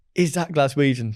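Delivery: ordinary delivery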